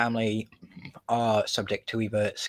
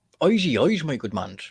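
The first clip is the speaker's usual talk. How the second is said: stagey, put-on Irish brogue; 3 semitones higher, 3 dB louder than usual. Joking with another speaker while saying goodbye: put-on Irish accent. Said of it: "the fucking Irish again".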